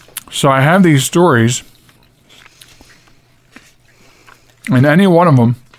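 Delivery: talking while chewing, mouth full of candy. A show host begins introducing stories while talking with a mouth full of candy. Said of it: "I'm sorry, I'm eating Easter candy".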